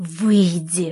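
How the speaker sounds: spoken through gritted, clenched teeth. A woman orders out the man who came in without knocking, through gritted teeth. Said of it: "процедила я сквозь зубы".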